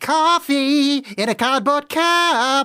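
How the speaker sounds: awful showy stage voice, high and very drawn out. Tell someone about his Broadway one man show, imitating his awful put-on voice. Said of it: "He does it in this awful voice".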